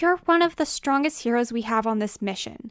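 plain

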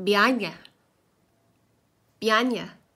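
put-on loud Scottish accent, words run together. Retelling asking a gentleman about tickets and quoting his reply; imitating a Scottish accent. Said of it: "with the Scottish accent".

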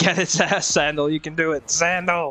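fake, put-on American accent. Speaker cheering someone on, in a put-on American accent. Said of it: "I'm giving you an American accent".

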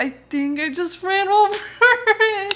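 acted crying, tearful, high and very slow. Retelling telling a neighbor her cat was run over: imitating own past crying. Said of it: "I started crying".

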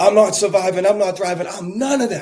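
play-acted, high, loud, furious screaming outburst. Retelling how a man at a gathering got up angry: retelling a man's angry screaming. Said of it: "he started screaming".

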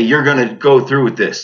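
normal talking voice

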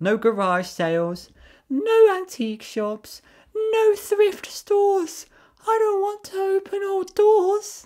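irritating, very high-pitched, rising voice at top of range. Reading a story aloud, voicing Mary's line in an annoying highest-pitch voice. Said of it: "do her voice like really annoying at the top of my like the highest pitch I can do".

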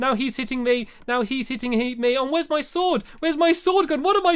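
panicked voice. Playing a game as an enemy starts attacking, panicking. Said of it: "I'm panicking here".

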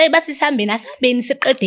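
ordinary talk

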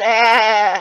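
bleating like a goat. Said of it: "Joanna sounds like a goat".

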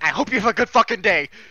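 loud, high-pitched, threatening yelling. Showing how a yelled well-wish sounds like a threat: yelling. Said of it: "if somebody was yelling at you and they went".

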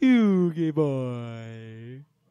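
put-on loud call with "boy" drawn out. Joking about a Yu-Gi-Oh scene, imitating Pegasus. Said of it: "That's how he'd be like".

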